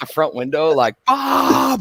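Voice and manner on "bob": screaming, very high-pitched and piercing. Retelling opening the front window to call to a neighbor: imitating own scream. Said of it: "And it's like screaming it".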